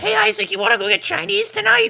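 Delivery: very high, loud, rough character voice. Imagining Toad greeting a friend at his house: Toad voice. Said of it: "with his voice?".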